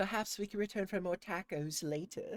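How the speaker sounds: put-on mimicked British accent. Repeating a line just heard in a game, imitated British accent. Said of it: "hearing them say tacos with the British accent".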